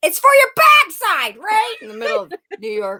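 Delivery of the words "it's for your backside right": very loud, high yell. Retelling a movie scene where he opens the window: imitating Crocodile Dundee screaming. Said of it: "he opens the window and he's scream-".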